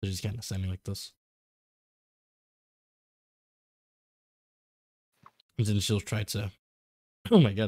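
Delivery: voice giving out. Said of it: "my voice is going out".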